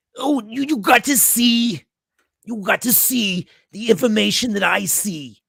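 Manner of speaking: put-on high, slow Brooklyn accent. Answering a question in an impression of Fauci: Fauci impression. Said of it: "pretty good impression of Fauci".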